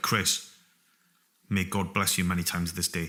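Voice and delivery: ordinary delivery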